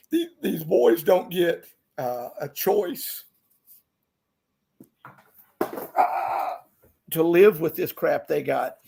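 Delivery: choked up, on the verge of crying. Speaker talking about the boys on the road, choking up. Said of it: "I'm gonna cry".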